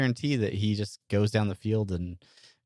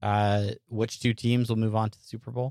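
usual speaking voice

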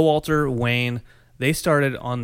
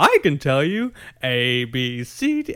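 very slow, dragged-out puppet voice; 3 semitones higher than usual. Acting out a Muppet that pops up at a window: Muppet voice. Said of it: "a Muppet pops up at the window. He's like".

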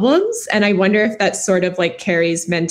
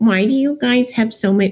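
put-on motherly character voice; 4 semitones higher than usual. Recalling how mom reacted to her high-school relationship fights; imitating mom's voice. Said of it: "I don't know why I did that voice".

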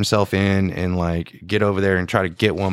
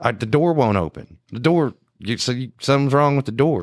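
hollered, called out, complaining from a distance; 3 semitones higher than usual. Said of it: "she's back there hollering".

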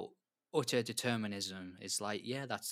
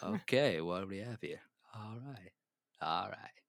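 put-on Texan actor voice. Trying out a voice after another speaker joins in: Matthew McConaughey voice. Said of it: "I started to sound like, um, Matthew McConaughey".

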